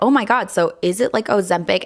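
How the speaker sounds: ordinary delivery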